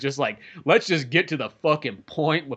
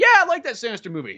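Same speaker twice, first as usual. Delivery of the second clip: put-on high-pitched little boy voice; 9 semitones higher, 3 dB louder than usual. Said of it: "it sounds like a little boy".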